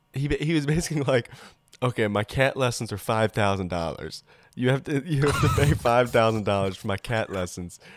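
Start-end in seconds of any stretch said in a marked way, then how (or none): none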